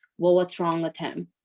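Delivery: ordinary delivery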